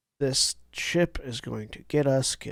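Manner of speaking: whispered mutter under the breath. Speaking in character inside a mech on a turn: quietly to oneself. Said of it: "quietly to myself".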